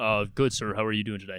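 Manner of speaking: weird deep put-on voice. Retelling own reply to a firm handshake greeting: imitating own deepened voice. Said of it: "You deepen your voice a little bit".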